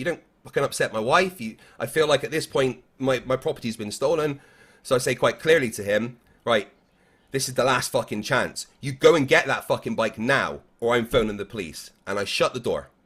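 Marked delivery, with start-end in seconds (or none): 7.3-11.9 mock, forceful, acted-out delivery. Retelling an ultimatum over a stolen bike, a forceful warning. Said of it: "Very forceful".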